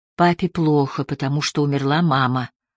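ordinary delivery, nothing marked

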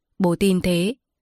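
ordinary delivery

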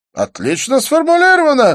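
very high, loud, ringing exclamation. A man responds to a woman's remark, then calls the waiter, exclaiming. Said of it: "воскликнул Дидье".

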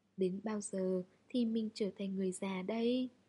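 ordinary delivery, nothing marked

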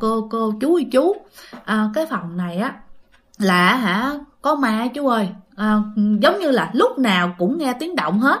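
plain

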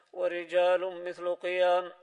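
plain

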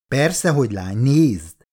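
ordinary delivery

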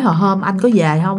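ordinary delivery

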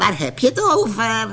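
high, raspy, hoarse, cackling witch voice. An ugly witch answers a visitor's question; hoarse cackling witch voice. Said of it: "Kakelde de lelijke heks met schorre stem".

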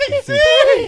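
very high, loud, thin disguised falsetto voice.

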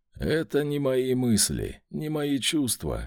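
ordinary talk

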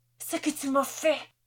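rasping, furious shout. Reading Nielsen's line as he strikes a man, a raging hoarse shout. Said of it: "Vociféra Nielsen, sa voix s'étirant en râlement rauque".

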